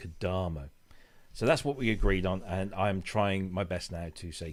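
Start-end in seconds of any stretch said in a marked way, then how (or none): 0.0-0.7 Kodamo with Italian-style stress on da. Explaining the Italian stress rule, stress middle syllable of Kodamo. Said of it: "the emphasis is always on the penultimate syllable. So it's Kodamo".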